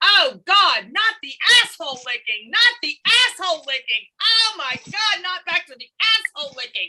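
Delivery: mock held-back screaming, high and mild. Retelling a joke at a birthday party: retelling own screaming. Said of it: "and I start screaming".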